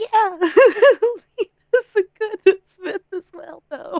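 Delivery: squeaky little voice, high and loud. Playing Lena, humoring a player by doing a little voice, Sir Tiny little voice. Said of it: "She puts on a little voice and's like".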